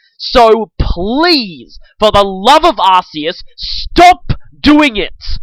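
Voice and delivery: angry, fed-up, exasperated, slow, deliberate delivery. Ranting about people comparing two separate franchises, angry. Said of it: "I've ever got this angry".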